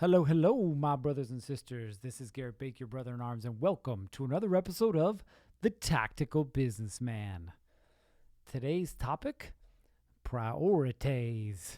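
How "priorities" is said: put-on a little Southern accent. Announcing today's topic in one word, with a little Southern accent. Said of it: "I said that with a little accent".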